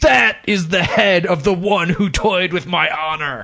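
put-on super tough woman's voice. Retelling what a woman shouted as she hurled it: put-on super tough chick voice. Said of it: "like a super tough chick voice".

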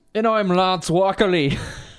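bad put-on Irish voice. A co-host introduces himself on Sick and Wrong, in a bad Irish accent. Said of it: "Is that your Irish voice?".

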